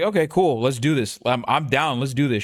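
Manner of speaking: ordinary delivery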